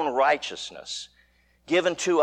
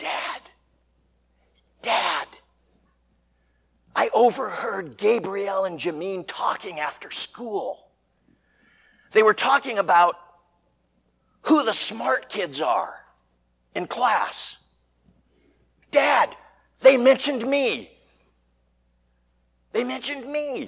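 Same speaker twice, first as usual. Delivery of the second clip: stage whisper with a confiding tone; 5 semitones higher than usual. A father retells what his ten-year-old said after school pickup: retelling a loud whisper. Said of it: "talking in a loud whisper for some reason".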